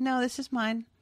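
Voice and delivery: very quiet, calm, no-fuss delivery. Acting out an old man taking back his car: very quiet. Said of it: "It's just a very quiet".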